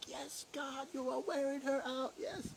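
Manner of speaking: very high, gushing cheer. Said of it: "she sent me this big voice message being like".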